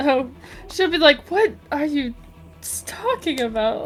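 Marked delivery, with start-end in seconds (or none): 1.3-3.9 whispered, breathy, utterly baffled tone. Voicing a character hearing about movies for the first time: imitating a confused character. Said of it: "very confused".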